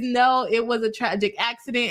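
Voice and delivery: ordinary talk, nothing marked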